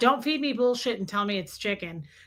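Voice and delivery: normal talking voice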